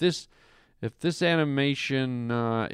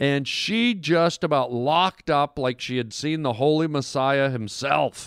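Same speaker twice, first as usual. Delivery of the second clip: normal talking voice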